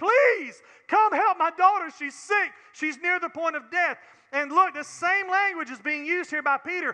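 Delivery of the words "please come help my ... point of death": loud, urgent, desperate pleading tone. Speaker acting out a father's plea for his sick daughter: mock desperate begging. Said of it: "He begged him".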